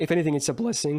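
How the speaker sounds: voice breaking mid-word on the word "blessing". Complaining about a game they can't play, voice cracking. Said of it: "did you hear that voice crack?".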